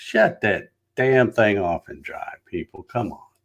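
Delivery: ordinary delivery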